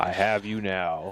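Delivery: mock stern father voice. Asked by friends for his best impression: James Earl Jones impression. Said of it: "that was a more of a stern dad, the James Earl Jones".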